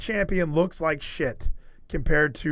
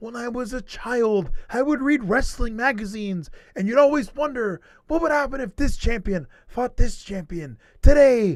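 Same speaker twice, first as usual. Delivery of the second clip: wrestling commentator voice; 6 semitones higher than usual. Retelling a commentator pumping up a pay-per-view match: Matt Striker impression. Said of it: "the greatest Matt Striker impression".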